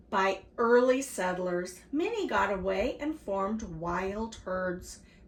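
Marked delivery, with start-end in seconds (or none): none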